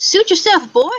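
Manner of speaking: shrill, very high, loud fairy voice. Voicing a fairy answering someone who turned down its offer: fairy voice. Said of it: "the fairy says".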